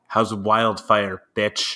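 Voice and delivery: put-on taunting whisper. Imagining someone leaning in close with a taunt: imagined whispered taunt. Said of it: "just whispers in my ear".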